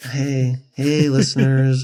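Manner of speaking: mock boring, stalling presenter tone. Retelling how life coach videos all start: imitating a boring life coach video intro. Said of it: "They all start out like".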